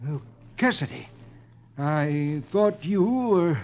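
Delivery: stammering, faltering. Narrator reading a story: a villain, caught going through files, stammering. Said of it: "and stammers".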